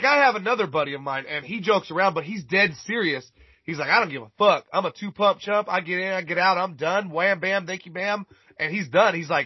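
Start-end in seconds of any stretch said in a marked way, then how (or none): none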